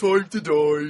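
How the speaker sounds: loud, unsettling, disturbing game-character voice. Quoting a line from a real-time strategy game: disturbing game character voice. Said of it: "What the hell is that from?".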